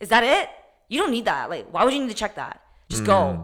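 laughing, scoffing, dismissive brush-off. Retelling a staff member's reply to asking about checking a bag, mock-scoffing, dismissive. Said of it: "She just scoffs like".

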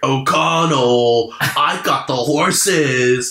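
put-on, drawn-out, high hollering shout. Retelling a movie line by Benny: imitating Benny yelling. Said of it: "yells, he's like".

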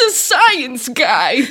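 put-on, loud, shivering chatter, words spat out. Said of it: "spitting out ice, being like".

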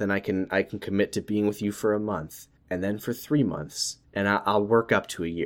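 low, soft, dead-serious tone.

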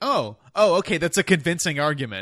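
high, loud, sarcastic fake tone. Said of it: "And I'm like".

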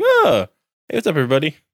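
high, sing-song, ditzy, swooping chirp. Discussing an episode, the speaker acts out Usagi waking up: imitating airhead Usagi. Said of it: "like I'm the airhead thing and wake up and be like".

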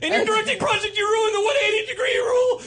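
very high, very loud scolding yell. Acting out lecturing a screenwriting class: imitating own yelling lecture. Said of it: "a lot like the yelling I was just doing".

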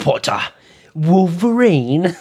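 high, full-on furious, super-angry outburst. Imagining a character saying the line: super angry Draco Malfoy. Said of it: "Draco Malfoy just being super angry".

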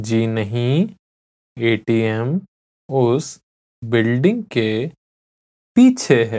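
deliberately slow. Repeating a Hindi answer again so listeners can repeat along, slowly. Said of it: "आई विल से इट again slowly".

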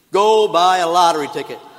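very loud, booming, thunderous voice. Telling a story of a man praying to win the lottery, a big booming voice. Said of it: "this big booming voice says".

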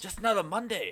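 very high robot voice with half-Australian, half-Italian accent. Attempting an accent impression, the speaker ends up with a half-Australian, half-Italian robot voice. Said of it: "That was a half Australian, half Italian robot".

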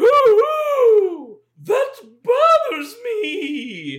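very high, swooping haunted moan, "me" stretched out. Speaker asked to try a voice for a line offers a haunted Mrs. Doubtfire voice. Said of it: "Sort of a like a haunted".

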